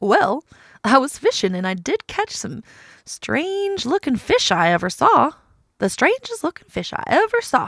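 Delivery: silly, swooping cartoon voice, high and loud. A character who was fishing answers a question about strange words, goofy voice. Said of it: "My goofy voice".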